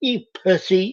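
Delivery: effeminate lilt, very high-pitched. Recalling what a man said when he refused to work out; high-pitched effeminate voice. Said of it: "he'd say in his high pitched, effeminate voice".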